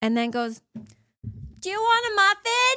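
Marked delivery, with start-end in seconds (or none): 1.6-2.8 mock loud, very high yell. Recounting a customer in line calling to her friend, imitating someone yelling across a coffee shop. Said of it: "she's yelling across the entire coffee shop".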